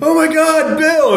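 very high, panicked, terrified scream.

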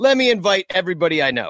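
normal talking voice

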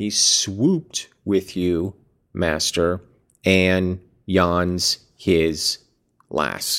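very slow, puzzled, reading-aloud delivery.

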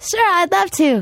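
very high, slow, girly put-on voice. Retelling answering a phone invitation out: imitating her own flustered phone voice. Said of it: "that's the voice I use".

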